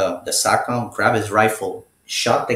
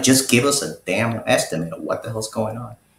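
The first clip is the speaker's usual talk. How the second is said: ordinary delivery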